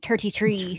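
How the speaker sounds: put-on Irish leprechaun voice. Repeating the age in a put-on Irish leprechaun voice. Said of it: "more like an Irishman".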